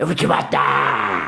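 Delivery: furious, low, slow demonic woman's growling rasp. Retelling how a woman turned on the speaker, imitating a furious possessed woman. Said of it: "a mulher emputecida, nossa, demoniada".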